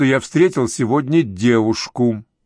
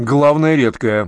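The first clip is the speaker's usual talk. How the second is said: with a snort. A man reacts to another man praising a woman's name, snorting. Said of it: "фыркнул Вадим Сергеевич".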